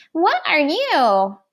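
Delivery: high-pitched china doll voice, "you" drawn out. A china doll speaks to a toy rabbit just placed beside her, high-pitched voice. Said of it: "she said in a high-pitched voice".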